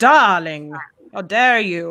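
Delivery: put-on vampire-like voice. Imitating a character's line and noting it comes out like Dracula. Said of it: "I sound like Dracula when I try to imitate him".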